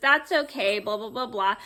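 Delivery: ordinary delivery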